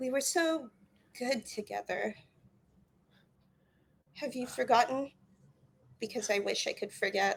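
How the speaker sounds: gentle, very quiet and soothing voice. Game master voicing a woman who is trying to recall a memory; very quiet soothing voice. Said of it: "in a very quiet, kind of soothing voice".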